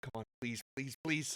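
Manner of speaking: pleading mutter under breath. Telling how he pours a potion into Ethildon's mouth, muttering under his breath. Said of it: "you can all hear him under his breath going".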